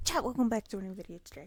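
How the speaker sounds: very fast delivery. Host greeting chat at the start of a new video, very fast. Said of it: "I said that so fast".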